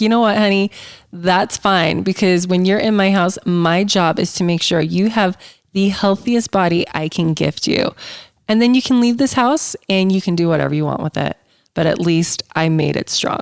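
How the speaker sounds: usual speaking voice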